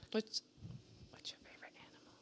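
hushed, barely voiced, very quiet whisper. Asking the others their favorite animal, whispering. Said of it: "She whispered it".

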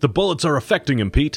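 high, quick, excited cry. Jim cries out to pete while the dragon rushes their ship, crying out. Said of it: "cried Jim".

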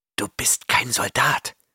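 words forced out as a hiss. Reading a story, a stranger finally speaks to the Chimerian, hissed. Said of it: "zischte der Fremde schließlich".

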